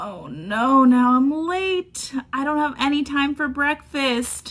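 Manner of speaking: with a gasp. Woken by a ringing alarm in a skit, the character reacts, gasping.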